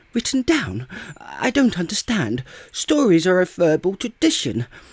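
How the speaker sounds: flustered, overexcited little voice. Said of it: "you excitable little fellow".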